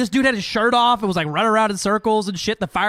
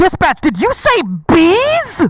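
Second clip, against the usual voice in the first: thoroughly rattled, flustered, caught off guard, high rising; 9 semitones higher, 6 dB louder than usual. Retelling a man's reply to dispatch over the intercom, imitating a flustered voice. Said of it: "the most flustered fucking voice I've ever heard".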